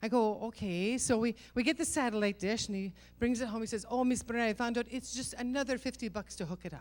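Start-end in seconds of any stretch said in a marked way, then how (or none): 3.9-6.8 put-on Middle Eastern accent. Telling a story, the speaker quotes a man in a Middle Eastern accent. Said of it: "I'm doing a Middle Eastern accent".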